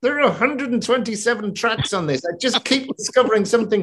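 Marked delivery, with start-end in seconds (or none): 0.0-2.2 high, forced out between clenched teeth. Quoting the man who mixed the tracks, through gritted teeth. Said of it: "he would say between gritted teeth".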